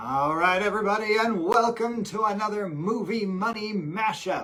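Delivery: put-on cool announcer voice, booming and drawn-out. Opening an episode in a cool announcer voice. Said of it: "That was my really cool announcer voice".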